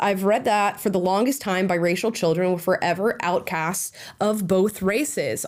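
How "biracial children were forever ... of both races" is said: ordinary talk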